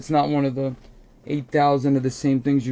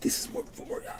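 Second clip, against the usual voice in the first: acted-out hushed whisper, much quieter. Acting out what a man whispered to someone, retelling a whisper. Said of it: "He's like whispering".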